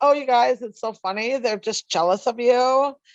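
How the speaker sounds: put-on California valley girl voice. Speaker acting out a woman who put the group on mute, valley girl voice. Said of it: "Judy does like a Valley Girl voice".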